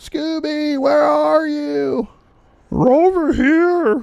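very high, drawn-out, really bad cartoon voice. Calling out a Scooby-Doo line: bad Shaggy and Scooby impression. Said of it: "I do a really bad Shaggy and Scooby".

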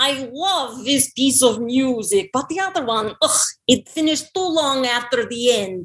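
put-on Russian accent throughout the line. Asked to show their Russian, the speaker does a line in a Russian accent. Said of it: "How about Russian".

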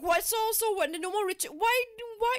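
mock, high, exaggerated rant.

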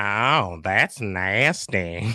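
animated cartoon character voice. Answering a request to say a cartoon catchphrase: Cleveland Brown voice. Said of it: "You do a great Cleveland".

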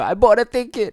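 all-out, high, loud screaming. Speaker retells Jericho screaming at the camera, imitating Jericho screaming. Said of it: "Jericho just like screaming to the camera".

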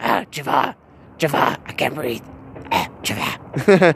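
raspy, breathy near-whisper character voice. Giving an example of a raspy voice: the guy from Aladdin. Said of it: "The guy off of, uh, Aladdin".

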